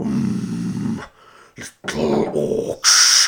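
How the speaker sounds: deep, loud giant voice. Retelling a scene from the film, Treebeard impression. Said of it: "That was incredibly good Treebeard impression".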